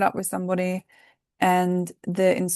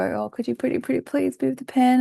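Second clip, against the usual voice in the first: put-on cutesy, syrupy, high, sickly-sweet baby voice; 6 semitones higher than usual. Mimicking how some people talk to themselves while writing, sickly sweet baby voice. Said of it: "they put like these little baby voices on".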